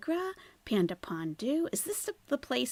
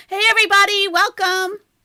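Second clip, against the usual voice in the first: very loud, high, excited, pitched-up booming shout; 12 semitones higher, 16 dB louder than usual. Testing whether the mic crackles, talking really loud. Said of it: "I'm gonna talk really loud".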